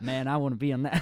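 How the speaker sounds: put-on American accent. Quoting people from new york: put-on american accent. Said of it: "I'm doing American accent now".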